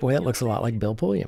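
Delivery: ordinary delivery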